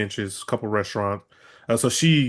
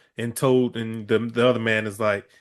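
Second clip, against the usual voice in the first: usual speaking voice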